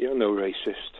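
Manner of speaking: deeply let down, very low murmur. During a chat about who is racist, the speaker repeats the verdict, sounding really disappointed. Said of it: "You sound really disappointed".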